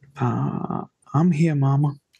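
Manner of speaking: soft, gentle doll voice. Describing a woman making her doll answer her, soft doll voice. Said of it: "you'll hear a soft voice".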